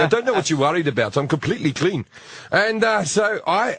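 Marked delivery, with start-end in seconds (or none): none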